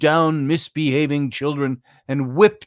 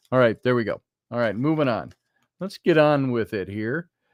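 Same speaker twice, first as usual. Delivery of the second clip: ordinary delivery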